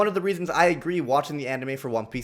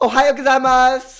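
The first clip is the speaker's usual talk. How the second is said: very high, very loud, shrill schoolgirl voice; 10 semitones higher, 11 dB louder than usual. Complaining about anime dubs, mocking how Goku sounds, in a girly Goku voice. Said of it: "sounds like it literally voiced by a girl".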